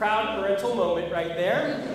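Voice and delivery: ordinary delivery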